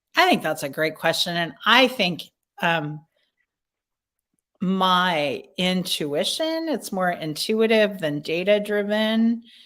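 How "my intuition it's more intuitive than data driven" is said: slow, pause-filled, thinking speech. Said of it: "I'm actually talking slowly".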